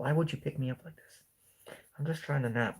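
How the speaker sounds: drowsy, sleepy pet dog voice. Holding the sleepy dog, who is napping: voicing Roxanne the dog. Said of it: "She's like".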